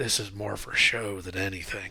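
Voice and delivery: low, hushed stage whisper. Narrating a game, the speaker voices the Viscount leaning over to a player: stage whisper. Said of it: "stage whispers to you".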